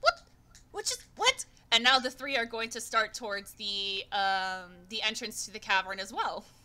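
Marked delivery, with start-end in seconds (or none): 0.0-1.5 very high-pitched, worried, alarmed, bewildered. Voicing three creatures who look very concerned: concerned, confused voice. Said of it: "those three look very concerned".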